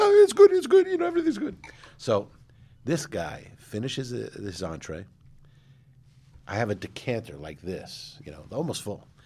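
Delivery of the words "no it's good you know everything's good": very loud, very high head voice falsetto. Retelling how the head waiter answered at the restaurant, in falsetto. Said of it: "he spoke with a falsetto voice".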